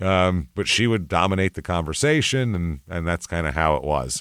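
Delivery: normal talking voice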